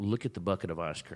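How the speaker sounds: ordinary talk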